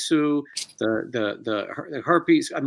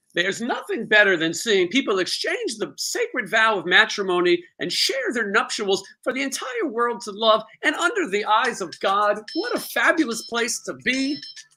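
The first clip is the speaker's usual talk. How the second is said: high, phony put-on delivery; 7 semitones higher than usual. Showing a phony way of recapping a wedding, as asked: phony put-on manner. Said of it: "your best phony impersonation".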